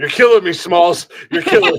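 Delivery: high, loud, laughing through the words.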